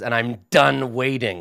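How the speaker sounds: snarling, impatient growl, out of patience. Game master voicing a character who snarls at the players, snarling. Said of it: "And he snarls at you".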